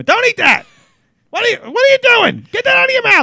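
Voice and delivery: very high, shrill, swooping yelling scream. Retelling how mother screamed at a child eating berries: imitating mother screaming. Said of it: "My mother would scream".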